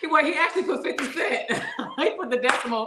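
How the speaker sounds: high-pitched speech through laughter.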